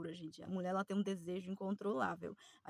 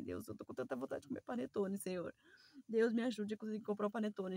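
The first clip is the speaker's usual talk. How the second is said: put-on tearful, childlike crying plea; 2 semitones higher than usual. Retelling a past prayer to God, reenacting crying like a child. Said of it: "eu até quase choro porque foi a verdade".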